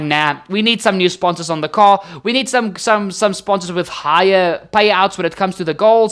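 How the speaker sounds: ordinary talk, nothing marked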